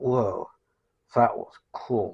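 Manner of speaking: slow, lisping surfer voice. Speaker demonstrating cartoon voices, trying the Butthead voice. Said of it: "Butthead has almost like a lisp... more like a surfer dude".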